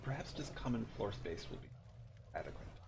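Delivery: hushed, very quiet mutter under the breath. Speaking in character, close to Lynn: said under the breath. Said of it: "I say this a little bit under my breath".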